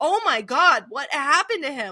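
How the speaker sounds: mock frantic alarm, loud and high. Retelling a story about a character alarmed on seeing someone hurt, acting out her panicked reaction. Imitating frantic alarm. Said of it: "she's like".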